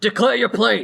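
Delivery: gruff, rough voice. Narrating the scene, voicing a creature who demands the players' plane: gruff voice. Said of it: "you hear a gruff voice say".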